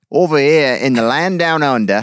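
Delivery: attempted Australian accent. Urged to just try it, the speaker repeats the line in an Australian accent. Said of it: "we gotta do it in an Australian accent".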